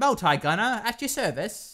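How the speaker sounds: high, put-on Cockney accent. Describing Americans voicing an Australian, quoting the line in a Multi Gunner Cockney-like voice. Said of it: "It sounds like a Cockney kind of".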